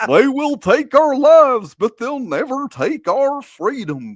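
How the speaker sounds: very high, swooping, dopey cartoon dog drawl. Trying out serious movie lines as said by Goofy, Goofy voice. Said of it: "serious lines from movies said by Goofy".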